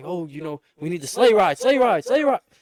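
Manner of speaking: high, loud, rising screamed yell. Retelling a call on the radio for help: retelling own screaming. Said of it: "I'm, like, screaming it".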